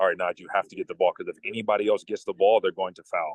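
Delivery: ordinary talk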